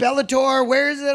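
ordinary talk, nothing marked

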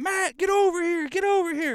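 play-acted, very high-pitched, urgent yelling. Retelling calling someone over after a find: imitating own yelling. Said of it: "yelling at Matt".

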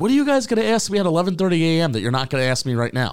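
acted-out sarcastic tone. Retelling what he said to reporters after the presser: imitating a sarcastic tone. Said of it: "Never heard him be that sarcastic".

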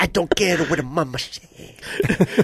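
put-on Italian accent. Imitating Vinny scolding someone about how they eat: Vinny impression, Italian accent. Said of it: "That's Vinny".

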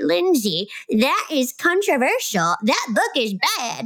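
put-on sassy old-lady grandma voice. Speaker imagines a listener messaging to object to a recommended book: grandma voice. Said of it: "I don't know where that grandma voice just came from".

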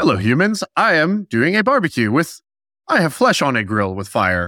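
machine-like, mechanical robot voice. Mocking a man's video about smoking meats, doing him in a robot voice. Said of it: "he was a robot trying to be like".

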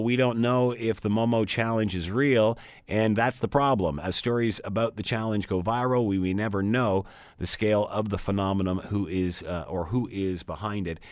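ordinary delivery

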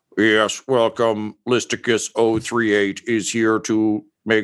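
robotic electronic voice-box character voice. A character with a voice-box piece greets newcomers; robotic voice-box voice. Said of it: "he's got definitely a voice box piece".

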